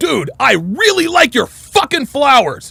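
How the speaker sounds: aggressive, hostile politeness. Example of someone saying something polite, aggressive tone. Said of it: "someone saying something polite very, very aggressively".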